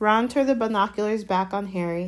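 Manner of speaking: ordinary delivery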